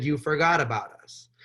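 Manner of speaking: normal talking voice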